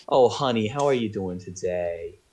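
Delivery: put-on tipsy grandma voice. Voicing a shop elf who greets a customer: wine mom grandma voice. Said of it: "A combination of a wine mom and a grandma".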